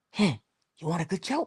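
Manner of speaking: put-on earnest, solemn, dead-serious delivery. Retelling how father told a joke, imitating a serious father. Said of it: "And he was so serious".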